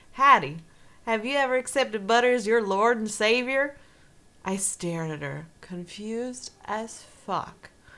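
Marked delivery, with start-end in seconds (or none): 0.2-3.8 put-on, laid-on Southern US accent. Quoting a line to Hattie in a Paula Deen Southern accent. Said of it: "I can't do the Paula Deen Southern accent. It might be more westerny, but we'll, we'll try".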